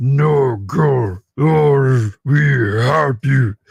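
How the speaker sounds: put-on loud, slow, stuffy monster voice.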